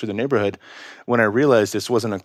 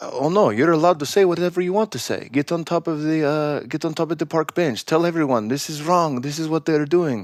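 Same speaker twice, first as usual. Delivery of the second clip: bad, shoddy Russian accent, pitched up; 6 semitones higher than usual. Retelling what a KGB defector said on a podcast: bad Yuri accent impression. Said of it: "sorry for the shitty accent".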